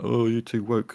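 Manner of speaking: put-on talking like an old, elderly grandfather. Retelling a reaction to progressive efforts: imitating an old granddad. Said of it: "old granddad going like".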